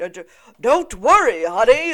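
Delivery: very loud, booming, swooping classic cartoon hero voice. Imitating a cartoon hero in the style of Hanna-Barbera: Hanna-Barbera cartoon hero voice. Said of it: "that Hanna-Barbera".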